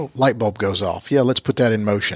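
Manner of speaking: usual speaking voice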